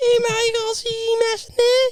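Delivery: put-on Liverpool Scouse accent. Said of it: "It just sounds like you".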